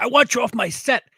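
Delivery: mock berating tone at a very high pitch. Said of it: "he was just berating the D P".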